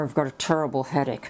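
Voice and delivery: ordinary talk, nothing marked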